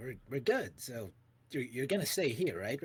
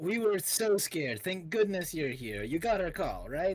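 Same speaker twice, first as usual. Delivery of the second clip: loud, high-pitched call; 5 semitones higher, 4 dB louder than usual. Playing a character who turns toward the back door and calls out: calling out. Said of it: "call out and goes like".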